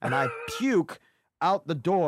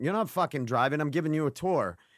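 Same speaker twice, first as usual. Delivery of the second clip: ordinary talk, nothing marked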